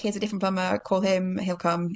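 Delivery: ordinary talk, nothing marked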